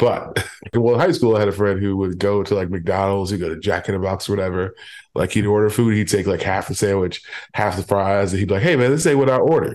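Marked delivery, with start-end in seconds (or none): 8.6-9.8 mock brash, indignant, loud, pitched-up voice. Speaker acting out a high school friend complaining about his food order, retelling a loud complaint. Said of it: "he would just be super loud about it".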